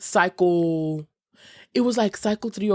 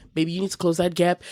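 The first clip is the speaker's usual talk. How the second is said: ordinary talk, nothing marked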